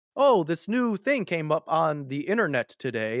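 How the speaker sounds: put-on slow, deliberate, old-time news anchor reading voice. Retelling how people on an old broadcast talked: imitating old news anchor speech. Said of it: "no one talks like that".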